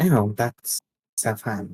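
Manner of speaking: disappointed, let-down tone. Told a new friend has been found for them, the character replies disappointed. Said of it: "you sounded disappointed".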